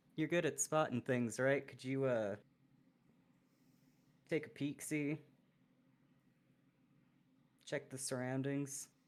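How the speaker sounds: hushed, quiet, low murmur. Leaning down in character to nudge a companion: speaking quietly in character. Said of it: "lean down and quietly say".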